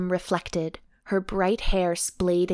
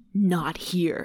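low, gruff delivery. Reading fiction aloud, voicing a man's line to a woman, low gruff voice. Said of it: "his voice low and gruff".

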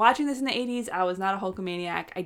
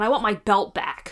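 loud yell; 5 dB louder than usual. Retelling a wrestler's demand for his belt: imitating Bret Hart yelling. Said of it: "And Bret just yelling".

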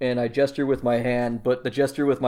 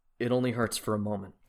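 soft half-whisper, right up close; 3 semitones lower, 8 dB quieter than usual. Half-whispering to a trapped kid while holding him close: half-whispering. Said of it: "and I whisper".

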